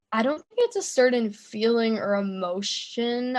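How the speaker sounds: plain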